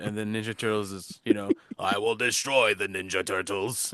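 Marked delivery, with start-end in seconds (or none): 1.8-3.9 put-on cartoon villain voice from the throat. Joking about a cartoon villain's voice, doing an impression of how he threatens, in an imitated throaty villain voice. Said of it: "like his voice is like".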